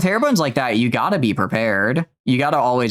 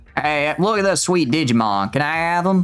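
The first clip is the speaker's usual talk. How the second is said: put-on rural country-folk accent; 4 semitones higher than usual. Voicing a game character who asks for the Digimon: country accent. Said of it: "I can give her a real country accent".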